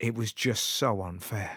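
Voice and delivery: put-on somber voice. Telling a story, quoting a comedian's son speaking to his father: imitating a somber voice. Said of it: "in a very somber voice".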